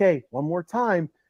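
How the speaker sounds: soft, close-up half-whisper. Retelling half-whispering to a daughter in a pretend sleeper hold: retelling a half-whisper. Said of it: "I'd whisper in her ear".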